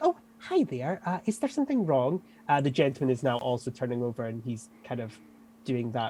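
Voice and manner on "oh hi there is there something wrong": put-on sweet, forced smiley friendly tone. Voicing a woman who masks dislike of someone: forced smiley friendly. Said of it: "back to smiley, friendly".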